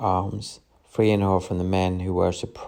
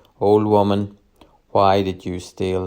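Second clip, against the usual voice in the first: plain reading voice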